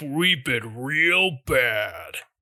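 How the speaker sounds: deep character voice, dropped right down low. Speaker describing a character's voice while imitating it, Dump Truck's deep voice. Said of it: "It's that deep".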